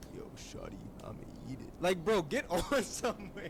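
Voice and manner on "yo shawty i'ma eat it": very quiet, breathy, fake-deep murmur. Reacting to a video, mocking a guy trying to deepen his voice: forced deep voice. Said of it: "trying to deepen his voice like".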